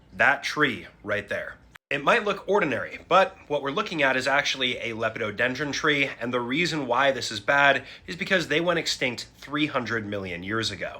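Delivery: ordinary delivery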